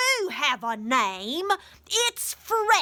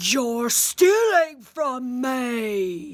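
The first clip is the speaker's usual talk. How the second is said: lumbering slow giant voice, "me" stretched out. Reading a fairytale where the giant catches Jack stealing, booming giant voice. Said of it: "[name] heard a booming voice. / [name] heard a booming voice".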